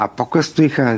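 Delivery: plain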